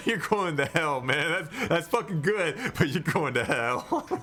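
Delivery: amused, with laughter running through the words. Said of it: "He's like".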